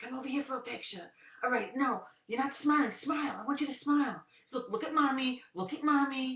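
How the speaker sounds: very high, very loud, shrill, screeching nagging hag voice. Retelling a mother nagging her kids for a picture, in a screechy whiskey-cigarettes hag voice. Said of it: "the most screechy, like whiskey cigarettes, hag voice".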